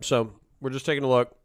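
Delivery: speaking with a full mouth. Greeting viewers while getting set up, talking while eating. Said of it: "sorry I'm eating".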